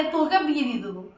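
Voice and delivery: ordinary talk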